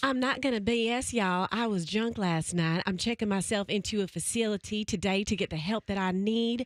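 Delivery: put-on rural Southern country accent. Taking a turn reading the apology statement in a country accent. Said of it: "Are we having an accent off?".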